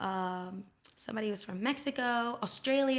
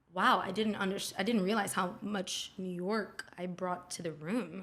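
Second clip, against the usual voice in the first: ordinary delivery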